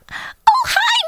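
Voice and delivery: put-on cartoon mouse voice. Demonstrating voices with a partner, opening a scene in Minnie Mouse voice. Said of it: "I'll do Minnie".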